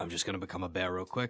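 hushed, very low, very quiet half-whisper. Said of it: "You whisper".

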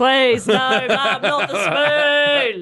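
slow, high, drawn-out mock yell. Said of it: "I yell".

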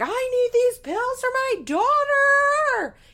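very high, shrill, loud, frantic, freaked-out voice. Acting out a frazzled person freaking out at a pharmacist, imitating a frantic plea. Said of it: "freaking the fuck out".

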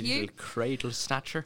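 slipping into an Irish accent. Teasing a younger co-host about their age, in an Irish accent. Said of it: "I went Irish there".

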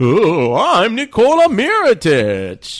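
stretched out, high pitch, swooping. Improvising a kids' story scene as Nikola Mirotic, Dracula-like. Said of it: "Is he Dracula, too?".

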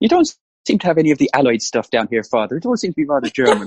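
convincing put-on Irish accent. Doing a Father Ted line when asked for an Irish accent: Irish accent. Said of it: "when you do an Irish accent".

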